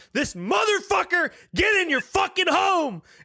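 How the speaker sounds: put-on enraged shrieking yell, very high. Recalling a fifth or sixth failed battle attempt, the speaker re-enacts their own screaming. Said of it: "And I just started screaming".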